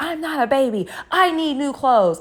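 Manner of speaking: acted, high-pitched, upset freaking-out outburst. Retelling a daughter answering her mother about the trashed socks: imitating a freak-out. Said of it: "she just freaks out".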